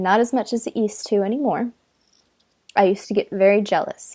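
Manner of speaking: ordinary delivery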